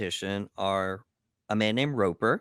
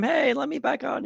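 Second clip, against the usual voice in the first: very high, drawn-out, ragged, rough yell. Retelling the boat story, acting out a man yelling at Parsons: retelling a yell. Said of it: "and then he's yelling at him".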